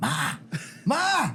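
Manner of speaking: mild, high-pitched calling-out voice with a screaming quality. Recalling yelling at their deaf mother as she walks by, retelling screaming. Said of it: "I'm screaming at her".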